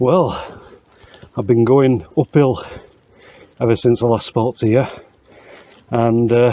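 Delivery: short of breath. Walking uphill, the speaker stops at a dam to report to listeners, out of breath. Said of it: "as you can probably tell, I'm a bit out of breath".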